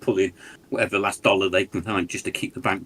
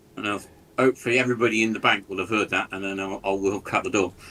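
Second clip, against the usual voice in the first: ordinary talk, nothing marked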